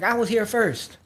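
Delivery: high, angry, heated, pissed-off woman's voice. Retelling a boarding dispute, the speaker voices the woman who was there first: imitating a furious woman. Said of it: "pissed off as hell".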